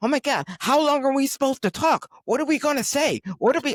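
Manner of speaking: frantic, panicked, very high-pitched freak-out. Retelling how the other speaker came to him before the show: imitating someone panicking. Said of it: "he's coming to me in a panic".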